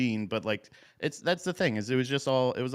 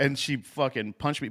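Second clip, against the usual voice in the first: plain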